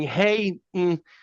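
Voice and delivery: called out without belting. Retelling leaning out of the shower to call the phone: imitating own yell. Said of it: "And I'm just yelling".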